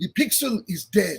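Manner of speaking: put-on heavy Dutch accent laid on thick, slow. Quoting an art professor from the Netherlands: thick Dutch accent. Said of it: "he said in his thick, thick, thick, uh, accent".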